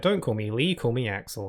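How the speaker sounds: ordinary delivery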